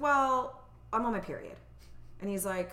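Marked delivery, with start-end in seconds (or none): none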